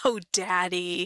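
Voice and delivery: words breaking up with laughter, voice cracking. Reading a story, the narrator voices a daughter answering her father: voice cracking with laughter. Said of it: "Her voice cracked with laughter".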